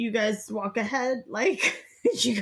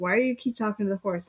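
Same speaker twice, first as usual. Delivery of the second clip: put-on laughing voice, faster pace. Quoting a woman who laughed at the speaker the whole time; retelling a laughing question. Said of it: "she's like laughing at me the whole time".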